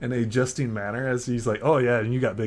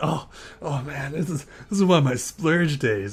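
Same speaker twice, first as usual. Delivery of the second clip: put-on drunk voice, higher; 3 semitones higher than usual. Voicing a drunk NPC thanking a player for food: drunk character voice. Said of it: "he is intoxicated".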